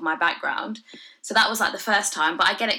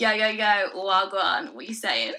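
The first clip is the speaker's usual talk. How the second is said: slow, put-on street slang voice. Repeating the line after another speaker asks: put-on slang voice. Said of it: "Say it again, say it again, [name]".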